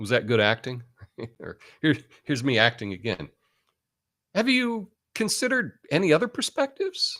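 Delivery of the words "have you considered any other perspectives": upward lift at the end of perspectives. Acting out an open question as an example, pitch rising on perspectives. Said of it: "you have your voice go up at the end of the question there".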